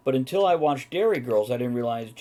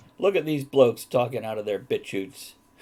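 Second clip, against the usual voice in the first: normal talking voice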